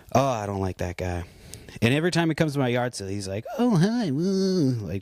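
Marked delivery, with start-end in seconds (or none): 3.5-4.7 very high, goofy, nerdy, dorky voice. Retelling how a yard sale visitor always greets: imitating someone acting dorky. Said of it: "tries to act like he's this, like, dorky little".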